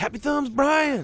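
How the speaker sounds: high, slow, loud yelling.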